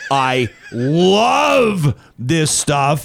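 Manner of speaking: drawn-out, belted gleeful shout. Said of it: "I mean, I love this stuff".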